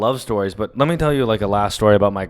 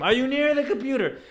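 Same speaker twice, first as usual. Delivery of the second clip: imitated scream, higher pitched; 14 semitones higher, 6 dB quieter than usual. Retelling a phone call helping a grandmother print: imitating own past scream. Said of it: "I would scream".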